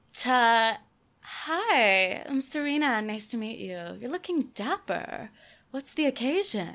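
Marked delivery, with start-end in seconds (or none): 1.2-6.7 prim, polished polite voice with drawn-out "hi". Showing how her voice changes on meeting a dashing gentleman, in a polite well-mannered voice. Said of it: "putting my best Emily Post manners".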